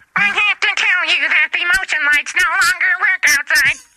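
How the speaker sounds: put-on robotic voice. Announcing an accident in a put-on voice: robot voice. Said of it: "robot Megan".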